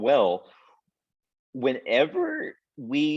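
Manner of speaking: breaking, cracking voice going up high. A speaker explaining shoulder anatomy, voice cracking. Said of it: "my voice just cracked".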